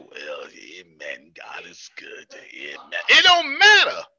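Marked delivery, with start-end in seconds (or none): 0.0-3.0 very low, very quiet preacher's drawl. Talking about preachers who prophesy at length, acting out one of them in a preacher voice. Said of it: "one of them preachers that do this here".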